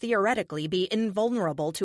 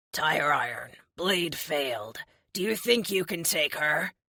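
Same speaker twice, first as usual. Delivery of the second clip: creepy voice with a crackling texture; 2 semitones lower than usual. Tire Iron, having stepped in front of Nova, asks the narrator: creepy, crackling voice. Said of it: "He asks in his creepy, crackling voice".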